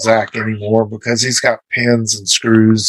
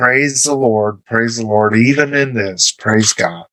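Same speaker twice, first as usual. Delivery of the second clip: ordinary delivery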